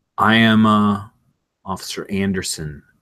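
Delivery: slightly metallic, processed-sounding voice. Narrating a scene, the speaker voices an officer introducing themselves, slightly metallic and tinny. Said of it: "slightly metallic tin coming through the Vox".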